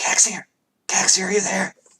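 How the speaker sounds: high-pitched stage whisper. Acting out a voice calling someone's name, quiet whisper. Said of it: "it's like a whisper".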